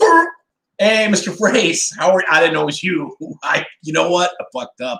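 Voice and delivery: talking in a dog's voice. Acting out what a dog would say on seeing the trainer: voicing the dog. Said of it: "your dog might be like".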